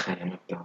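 very quiet, hushed, barely voiced under-the-breath mutter. Imagining what a character would say, muttered under breath. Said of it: "Poe would mutter under his breath".

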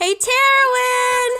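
shouting loudly. Playing a character yelling a name into an abyss: yelling into the abyss. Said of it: "Pants yells out into the abyss".

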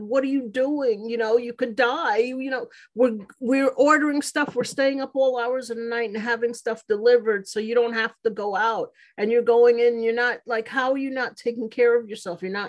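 crying, angry, tearful, upset outburst. Retelling what a crying daughter said on coming home: imitating a crying daughter. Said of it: "she just started crying and she said".

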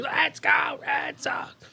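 put-on breathy whispered little-kid cheer. Telling how a lady complained at a baseball game, imitating Emma cheering. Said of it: "because Emma's cheering".

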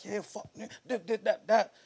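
raw, high, angry shouting. Retelling a road incident, the speaker reenacts yelling in the car: retelling a yell. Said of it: "I'm yelling in the car like".

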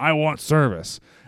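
loud high-pitched screaming. Retelling a game scene where a customer screams at the counter: imitating a customer screaming.

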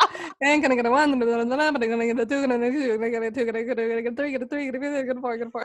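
imitated fast auctioneer voice, rapid calling. Joking that fast talking sounds like auctioneers: fast auctioneer voice. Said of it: "We sound like auctioneers".

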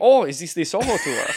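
put-on German accent. Retelling how a German group asked about the Soho tour, in a German accent. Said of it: "Doing a German accent".

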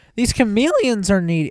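voice breaking sharply, hard crack pitched high. Replying after being called needy, voice cracking hard. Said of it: "my voice just cracked really hard".

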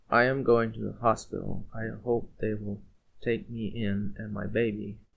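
usual speaking voice

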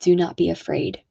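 ordinary delivery

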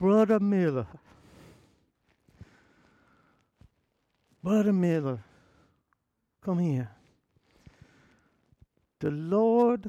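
put-on Southern US accent. Retelling how an older church member called him over: imitating Mama Strange's accent.

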